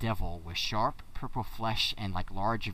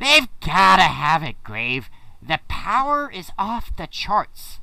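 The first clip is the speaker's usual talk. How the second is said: shrieking, very high, very loud skull voice; 10 semitones higher, 11 dB louder than usual. Voicing a talking skull who argues with a companion: voicing a talking skull. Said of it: "the skull speaks up".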